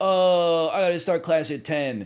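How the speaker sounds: mocking, teasing impression, high and loud. Comparing engineers with other students, the speaker does an impression of the listener. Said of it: "my impression of you".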